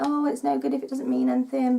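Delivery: plain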